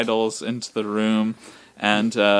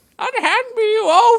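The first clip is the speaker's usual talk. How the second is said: put-on old man voice, higher and louder; 4 dB louder than usual. Voicing an old man who is grabbed, in an old man character voice.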